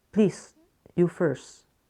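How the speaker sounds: ordinary delivery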